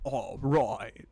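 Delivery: loud, laid-back, easygoing surfer-dude voice. Placing characters in a ranking and imitating one of them: Snake voice. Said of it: "Kind of sounds like a surfer".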